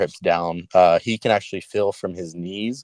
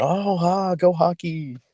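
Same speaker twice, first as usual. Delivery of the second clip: put-on very high, drawn-out little boy's screaming cheer; 11 semitones higher than usual. Retelling how the little boy reacts to hockey on TV: imitating a child screaming. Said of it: "he's screaming".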